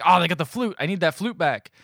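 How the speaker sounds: angry, ticked-off, pissed-off tone. Retelling a movie scene where a character is pissed: imitating someone angry. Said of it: "Ice-T's pissed".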